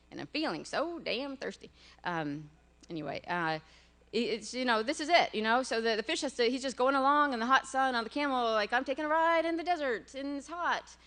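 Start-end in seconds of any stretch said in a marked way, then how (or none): 0.1-1.7 put-on heavy, thick Southern American accent. Repeating how the speaker's daughter says this line, in a thick Southern accent. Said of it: "My my daughter always says that with a thick Southern accent".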